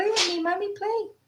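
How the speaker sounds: very high-pitched put-on dog voice. Retelling how the dog ran off instead of staying: voicing the dog. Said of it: "She was like".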